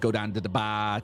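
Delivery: slow, drawn-out, stock Boston accent. Discussing how hard a good one is, a line in generic Boston accent. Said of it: "typically the generic one is".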